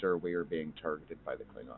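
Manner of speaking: very soft, hushed, very quiet, low voice. A player turns to Graves during the game and speaks very softly. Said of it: "very softly say".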